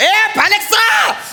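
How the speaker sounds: high, slow, drawn-out shout.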